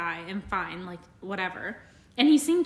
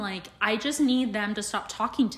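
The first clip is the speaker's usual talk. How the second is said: ordinary talk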